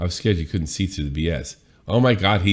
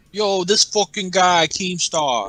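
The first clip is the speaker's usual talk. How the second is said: put-on Brooklyn accent, yelling; 12 semitones higher than usual. Describing a man's rant, the speaker quotes it: Tommy C voice, big Brooklyn accent. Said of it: "yelling with a big Brooklyn accent".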